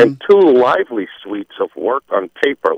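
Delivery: ordinary delivery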